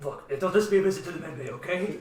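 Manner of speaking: normal talking voice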